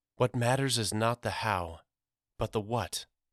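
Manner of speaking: ordinary delivery, nothing marked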